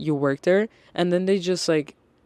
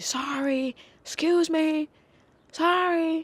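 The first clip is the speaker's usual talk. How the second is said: very high, very slow, shrill, drawn-out screeching; 11 semitones higher than usual. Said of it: "I just hear someone continuously".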